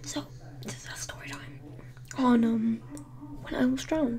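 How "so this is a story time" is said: soft, hushed whisper. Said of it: "Sorry, I have to whisper".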